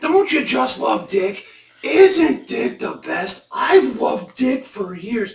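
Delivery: very high, shrill, drawn-out gushing voice. Retelling what a woman kept saying, imitating a high shrill voice. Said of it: "she has this very high shrill voice".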